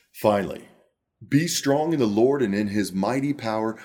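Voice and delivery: theatrical, dramatic narrator storytelling voice. Reading a passage aloud to listeners, dramatic storytelling voice. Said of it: "I'm going to read this to you in my dramatic storytelling voice".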